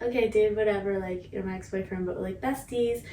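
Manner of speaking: plain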